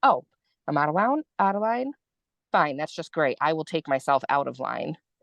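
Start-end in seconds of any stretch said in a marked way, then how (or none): none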